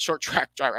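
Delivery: rushed, too fast, tripping over the words. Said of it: "I'm speaking too fast".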